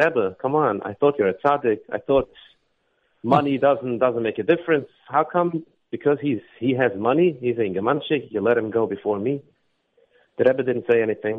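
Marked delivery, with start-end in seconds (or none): none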